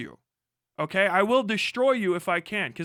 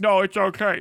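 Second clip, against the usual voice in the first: mock slobbery voice, louder, slower; 4 dB louder than usual. Ranting, the speaker mocks an audience member talking through a mouthful of slobber. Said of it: "through a, a, a fucking mouthful of slobber say like".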